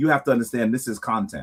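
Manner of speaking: put-on whisper. Retelling what another person whispered to him: imitating a whisper. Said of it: "and he whispered to me".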